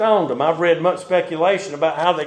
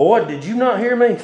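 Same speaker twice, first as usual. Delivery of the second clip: put-on stern scolding, pitched up; 4 semitones higher than usual. The speaker recalls being asked as a child, finger pointed in his face: imitating a stern voice. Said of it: "a stern voice".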